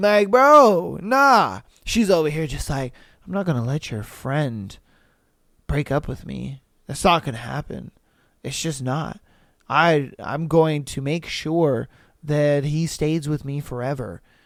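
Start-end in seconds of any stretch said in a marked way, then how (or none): 3.3-14.2 put-on low, flat, droning monotone rant without letup. Imitating someone describing a plan to keep her boyfriend: imitating a monotone rant. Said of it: "went on a long monotone rant like that".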